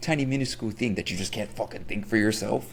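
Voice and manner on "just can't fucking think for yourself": ordinary talk, nothing marked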